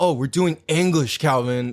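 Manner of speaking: put-on condescending, talking-down teacher tone. Retelling what the teacher said after a wrong reading: imitating a condescending teacher. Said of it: "kinda condescendingly".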